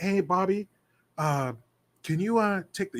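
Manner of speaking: soft-spoken, quiet voice full of little pauses. Retelling what Bill asked Bobby: imitating a soft-spoken man. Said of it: "he's real soft-spoken, too".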